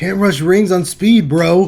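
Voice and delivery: bad laid-back stoner voice, slow spaced-out drawl. After saying it can't be done, the speaker tries a Scott stoner voice. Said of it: "the stonerest voice of all time for Scott".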